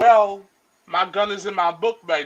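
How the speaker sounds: normal talking voice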